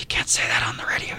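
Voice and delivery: soft, unvoiced whisper under the breath. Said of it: "And he goes".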